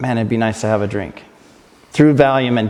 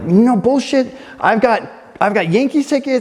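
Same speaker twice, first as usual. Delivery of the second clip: very high-pitched, raised yelling; 11 semitones higher than usual. Recounting arguing with the EMT, acting out his own yelling. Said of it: "And I'm yelling at the guy".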